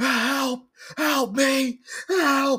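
acted-out spooked cries, very high, slow and drawn-out. Retelling a story about apes meeting a man, acting out his spooked yell. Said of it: "he got spooked like crazy".

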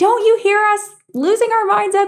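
very high-pitched yell. Retelling a fight when the husband walks in, reenacting yelling at husband. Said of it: "then I start yelling at him".

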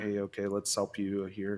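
normal talking voice

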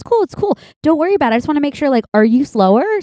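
friendly on top, passive-aggressive underneath. Retelling how a friend spoke to a waiter about a fork: imitating a passive-aggressive friend. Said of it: "passively aggressively".

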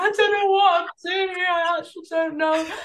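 very high, weepy, tearful crying words. Retelling sitting on a plane next to a honeymoon couple: retelling own crying.

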